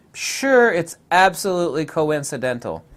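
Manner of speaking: sarcastic, tongue-in-cheek. Commenting on a pattern's resemblance to the dream catcher: sarcastic. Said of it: "That's a little bit of sarcasm there".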